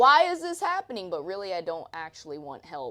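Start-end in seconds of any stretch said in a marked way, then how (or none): 0.0-1.1 very loud, high, shrill, exasperated, frustrated yelling. Retelling how they yell at him during bad lifts, retelling yelling at him. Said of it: "And then I'm like yelling at him".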